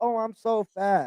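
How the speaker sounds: very slow, drawn-out, moping complaining tone. Imitating a skinny girl looking in the mirror: imitating a skinny girl complaining. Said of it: "The skinny girl looking in the mirror like".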